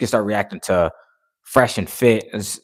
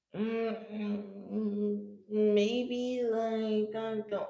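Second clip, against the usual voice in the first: very slow, halting, unsure, with raised pitch; 12 semitones higher, 14 dB quieter than usual. Contrasting confident speech with someone who talks unsure: hesitant and unsure. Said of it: "as opposed to someone t- talking like this".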